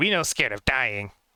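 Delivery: put-on goblin creature voice. Voicing goblins who answer a threat: Goblin voice. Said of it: "I just say it in Goblin".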